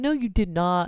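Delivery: calling back, yelled out. Retelling how a man yelled back after hearing of a broken leg, retelling a yell. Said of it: "And he yells back".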